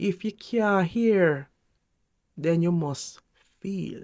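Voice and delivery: Jamaican-style speaking voice. Quoting a jamaican proverb in jamaican style: jamaican accent. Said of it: "I'm going to say it in a Jamaican style".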